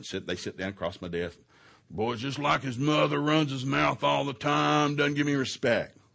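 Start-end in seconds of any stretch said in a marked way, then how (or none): 1.9-5.9 put-on loud, high-pitched griping voice. Retelling a father complaining about his son in counseling: imitating a griping father. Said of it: "he's griping".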